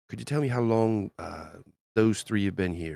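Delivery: speaking low. A character sets a gold piece on the bar and asks the man: lowered voice. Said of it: "possibly he's gonna lower his voice".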